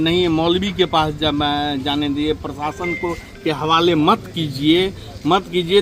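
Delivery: ordinary talk, nothing marked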